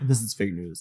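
low, hushed newscaster anchor voice. Reacting to a co-host's joke, in a mock news anchor voice. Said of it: "your anchor voice".

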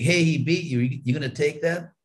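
put-on playful, good-natured teasing. Retelling how Prabhupada teased Tamal during a walk: retelling Prabhupada's teasing. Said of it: "Prabhupada was kind of teasing Tamal".

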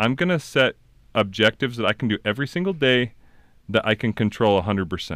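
normal talking voice

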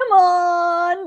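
long, loud, drawn-out mooing cow-call yell. Asked how the call goes, the speaker demonstrates a long, loud yell. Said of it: "like really long and loud at them".

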